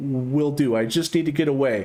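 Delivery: plain reading voice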